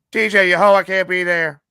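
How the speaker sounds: deliberate, slow, loud, stretched-out character voice. Showing the other speaker how Carla's voice should be done: imitating Carla's voice. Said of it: "let me show you".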